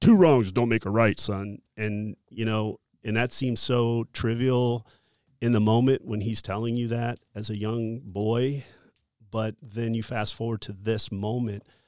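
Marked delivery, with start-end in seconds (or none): 0.0-1.6 put-on stern voice, louder. Recalling what the dad told him as a young boy, mock-stern, like a dad. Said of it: "my dad sternly saying".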